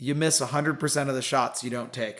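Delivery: normal talking voice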